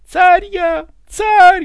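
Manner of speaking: shrill, very loud, very high full-voice yell. Ivan, being slapped around by Petr, yells back at full voice. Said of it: "заорал Иван во весь голос".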